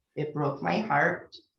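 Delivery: plain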